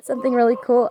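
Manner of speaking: tearful speech, talking through tears. Telling viewers about planting a family flower garden, crying while talking. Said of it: "I'm sorry that I'm crying".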